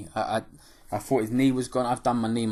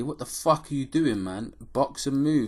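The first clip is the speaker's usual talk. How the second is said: mild put-on shouting; 3 semitones higher than usual. Retelling watching the fight on the telly: imitating screaming at the telly. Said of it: "I'm sitting there screaming at the telly".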